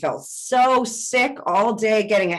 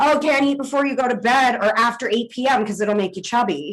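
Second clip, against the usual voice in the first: normal talking voice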